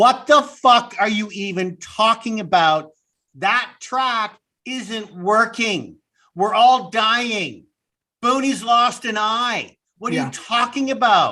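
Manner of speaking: acted-out, put-on screaming. Recounting screaming at the television over a character's line, reenacting the scream. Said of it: "I stopped the television and I screamed".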